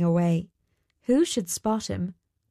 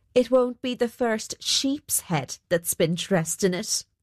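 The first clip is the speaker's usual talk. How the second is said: usual speaking voice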